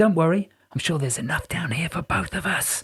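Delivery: conspiratorial whisper. A narrator reading a man's reassurance to another character: conspiratorial whisper. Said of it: "he whispered in a conspiratorial tone".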